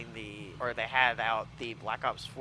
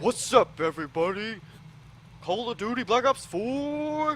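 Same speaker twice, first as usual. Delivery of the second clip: very loud, very high dudebro shouting, hyped; 12 semitones higher, 8 dB louder than usual. Joking with a co-host about pitching a game ad, doing a bro voice. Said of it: "that your bro voice?".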